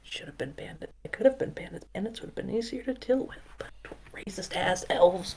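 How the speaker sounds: very quiet, whispered muttering under the breath. Narrating Baxter walking off down the path, muttering under his breath. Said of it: "muttering under his breath to himself".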